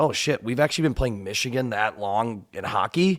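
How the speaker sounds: ordinary delivery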